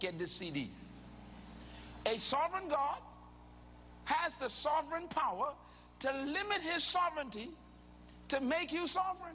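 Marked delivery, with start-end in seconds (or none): 2.1-9.3 slow, deliberate, halting, pitched-up delivery. A speaker repeats his statement for his listeners, saying it slowly. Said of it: "I'm going to say that slow".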